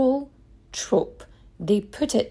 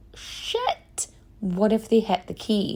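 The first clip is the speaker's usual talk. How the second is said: normal talking voice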